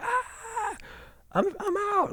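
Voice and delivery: play-acted, very high, very slow, drawn-out cry. Retelling walking around town after leaving the job: retelling own scream. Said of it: "I screamed".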